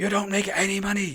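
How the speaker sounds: mock shouting. Retelling an Uber driver telling a passenger to join the union: imitating someone shouting. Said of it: "he was proper shouting".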